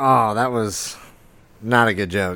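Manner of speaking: ordinary talk, nothing marked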